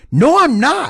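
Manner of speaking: put-on heated, defensive, angry tone, very high pitch. Retelling Harper's denial in an argument: imitating someone getting angry. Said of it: "He's getting pissed at you".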